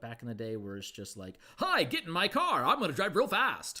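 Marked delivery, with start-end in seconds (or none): 1.6-3.8 very high, loud, swooping cartoon voice. Mocking old anime dubbing: Speed Racer English dub voice. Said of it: "you think of Speed Racer and all that stuff".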